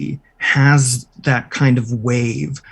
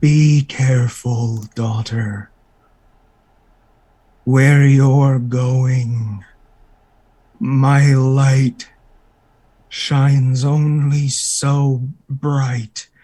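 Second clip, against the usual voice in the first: slow, tired, crackling voice. Voicing Lathander speaking from a figure to his daughter, tired static-like voice. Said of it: "it sounds tired and it sounds almost um, ... like static".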